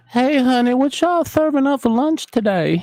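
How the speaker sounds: very high put-on old woman voice.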